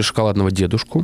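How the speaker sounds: plain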